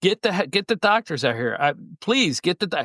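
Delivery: stumbling, urgent shouting that breaks off. Retelling how Michael Cole called for help: retelling someone screaming. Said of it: "And he's screaming".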